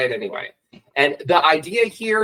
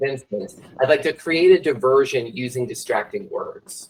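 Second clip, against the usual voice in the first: usual speaking voice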